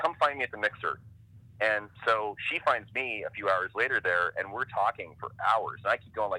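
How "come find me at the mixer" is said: plain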